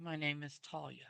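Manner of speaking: close, soft whispering. A player's character leans close to whisper into her ear: whispering. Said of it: "I'm going to whisper".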